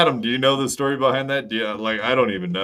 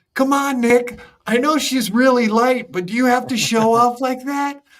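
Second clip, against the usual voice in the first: very high, raised beta-male voice; 5 dB louder than usual. Imitating Aaron pleading with Nick: beta voice imitating Aaron. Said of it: "Beta voice".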